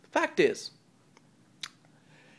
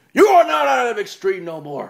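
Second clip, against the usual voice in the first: put-on crowd yelling. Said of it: "They're gonna be like".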